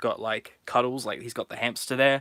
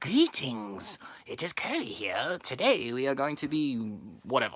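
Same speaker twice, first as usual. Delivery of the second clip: terrible, hammy, swooping put-on spooky horror-host voice; 4 dB quieter than usual. Pitching a host introducing each episode like a horror host: terrible Curly voice. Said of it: "Terrible Curly voice".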